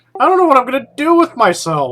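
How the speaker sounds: plainly sarcastic, swooping. Complaining about being given free ships: sarcastic tone. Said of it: "There was definitely sarcasm in there".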